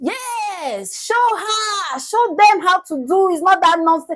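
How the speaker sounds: cheering voice, high and loud. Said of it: "Ibiabo was like".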